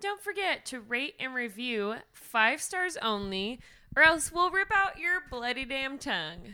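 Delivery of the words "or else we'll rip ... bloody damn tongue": full, laid-on, put-on rural country accent. Podcast host closing the show, asking listeners to rate and review; real country accent. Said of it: "I said that real country".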